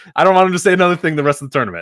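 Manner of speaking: ordinary talk, nothing marked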